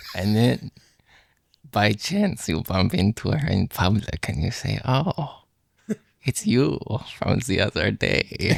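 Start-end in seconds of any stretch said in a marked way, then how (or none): 4.8-8.6 put-on eerie, unsettling, creepy voice. Bumping into her in public by chance, greeting her in a creepy voice. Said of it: "I was just doing like a creepy voice".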